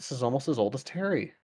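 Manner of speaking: soft mutter under the breath, half to himself. Player voicing Zan while looking at a petrified tree: Zan muttering under his breath. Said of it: "Zan just kind of mutters under his breath".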